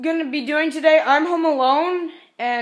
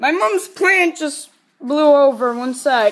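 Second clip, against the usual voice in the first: usual speaking voice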